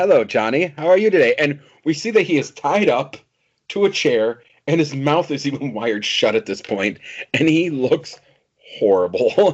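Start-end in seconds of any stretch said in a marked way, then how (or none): 0.0-1.3 put-on British accent. Recapping a scene, voicing a line to a man tied to a chair: british accent. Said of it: "With a British accent".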